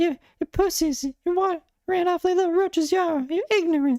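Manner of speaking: very high-pitched ranting voice. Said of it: "picturing this whole rant in [name]'s voice".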